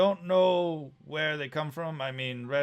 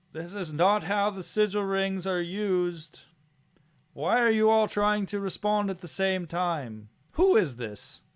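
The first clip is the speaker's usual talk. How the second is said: high, loud yell above a noisy din; 5 semitones higher, 3 dB louder than usual. A game master voices someone yelling over many voices on a sigil ring, loud yelling voice. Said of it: "a much louder sort yelling over it".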